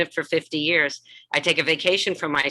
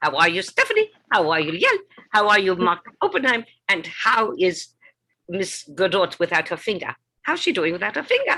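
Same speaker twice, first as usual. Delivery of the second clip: swooping sing-song, every sentence ending rising; 3 semitones higher than usual. Showing how the character talks, endings rising: Doctor Ruth voice, rising sentence ends. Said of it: "all the ends of her sentences go up".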